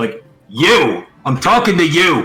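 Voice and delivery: loud shout. Calling up to an old guy on a public beach, loud shout. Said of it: "You keep your voice down".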